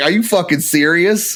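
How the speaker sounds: words broken up by laughter while talking. Retelling a police interview where the speaker started laughing: retelling laughing while talking. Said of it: "I started laughing".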